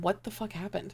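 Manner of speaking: speaking low. Retelling turning away from the others to ask a question, lowered voice. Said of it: "And I'm like lowering my voice".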